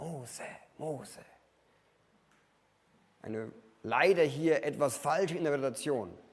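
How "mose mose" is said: gentle, rustling, very soft, breathy, barely voiced whisper. Describing the voice calling Moses in The Prince of Egypt, soft whisper. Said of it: "ist es ein Säuseln".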